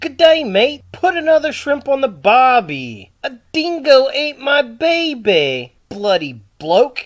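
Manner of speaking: put-on loud Australian accent. Pointing someone out, then quoting Crocodile Dundee: Crocodile Dundee voice. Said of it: "it's Crocodile Dundee".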